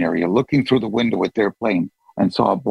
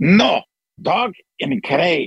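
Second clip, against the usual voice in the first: bad Greek accent, much higher, slower; 8 semitones higher than usual. Retelling what a lady told him about his dog, in a lousy Greek accent. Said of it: "It's a lousy Greek accent".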